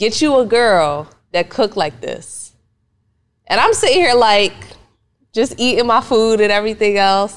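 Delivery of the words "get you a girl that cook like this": slick, smooth-talking delivery. Retelling what he said over dinner, imitating a smooth delivery. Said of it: "he said it in a real smooth manner".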